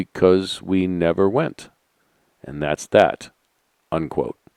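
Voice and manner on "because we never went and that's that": very soft, slow, deliberate, soft-spoken voice. Retelling an answer given to a girl in an interview: imitating speaking very softly. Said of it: "he said very softly".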